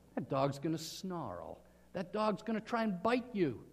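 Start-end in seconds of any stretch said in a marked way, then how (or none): none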